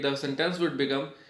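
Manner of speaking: ordinary talk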